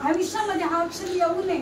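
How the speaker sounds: ordinary talk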